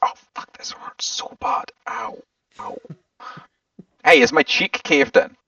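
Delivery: whispered, pained cursing and muttering. Retelling pushing his smashed nose back, asking Ravi: retelling quiet swearing under breath. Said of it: "quietly swearing under my breath".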